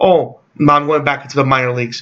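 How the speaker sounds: ordinary talk, nothing marked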